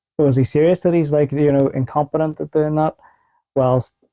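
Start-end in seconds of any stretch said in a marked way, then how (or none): none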